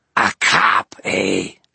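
loud, rough, raspy monster voice. Narrator reading the ghoul's line to a cop, rasping ghoul voice. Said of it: "The ghoul rasped".

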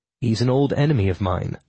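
ordinary delivery

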